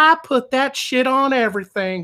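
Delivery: put-on high-pitched elderly woman voice. Quoting the old lady at the end of a hot sauce commercial, old lady voice. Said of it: "you hear the old lady voice".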